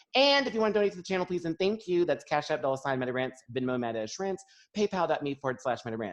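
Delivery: rapid-fire, rushed, rattled-off reading. A channel host lists her donation links before the main segment, speaking fast. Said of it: "I'm speaking so fast".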